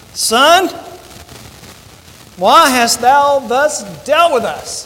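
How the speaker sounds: slow, faintly angry tone. A mother speaking to her son after seeking him sorrowing, with a tinge of anger. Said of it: "a little tinge of anger in this statement".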